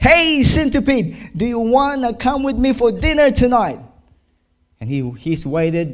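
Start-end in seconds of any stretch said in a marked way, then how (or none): 0.0-3.8 very high, loud shouted call. Telling a story, a man holds the box up to the centipede: acting out a shout. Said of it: "he shouted".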